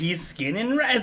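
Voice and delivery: creepy horror-killer emphasis leaning on words, pitched high. Imitating the other speaker's emphasis on the last line: imitating a psycho-killer emphasis. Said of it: "it just sounded very psycho killery".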